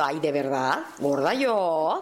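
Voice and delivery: very slow, dry, sarcastic disbelief. Explaining the origin of a show's name: sarcastic tone. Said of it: "decirlo así como sarcásticamente".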